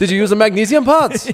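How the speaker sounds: awful put-on German accent, very high, very loud. Quoting a movie line about a car, in a terrible German accent. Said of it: "Excuse the terrible".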